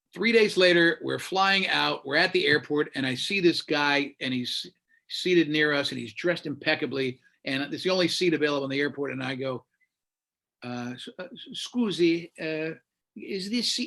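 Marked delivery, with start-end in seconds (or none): 11.5-13.9 careful, slow, halting broken English, word by word. Asking an italian man at the airport about a seat, retelling speaking broken english. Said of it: "And in broken English".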